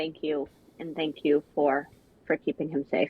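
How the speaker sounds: in-character orc voice. Voicing a character who thanks another quietly. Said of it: "she's gonna say in Orcish quietly".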